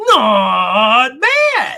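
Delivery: loud, belted American accent, drawn-out "not". Showing how to say the same words in american: american accent. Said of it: "then I'll say it in American".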